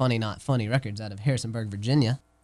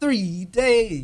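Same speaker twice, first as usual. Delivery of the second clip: higher-pitched, announcer-style proclaiming voice; 9 semitones higher, 4 dB louder than usual. Repeating the length of a three-day tour for the others: announcer voice. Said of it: "That was my announcer voice".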